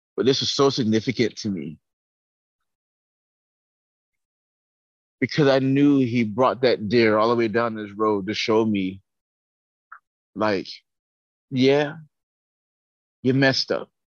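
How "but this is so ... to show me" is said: voice restraining emotion, trying not to break. Sharing a significant moment, holding back emotion. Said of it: "I'm trying not to be emotional right now".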